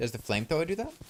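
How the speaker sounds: very high voice that cracks and breaks. Asking a question, voice cracking. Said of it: "my voice cracked there".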